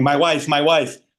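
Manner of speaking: light, mild, half-strength screamed cry. Retelling how a tackled friend grabbed for the fake sheep: imitating someone screaming.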